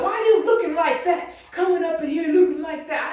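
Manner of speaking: ranting, scolding yell. Retelling how a man went off on the speaker in the hospital: imitating someone yelling. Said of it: "Here you are yelling and screaming".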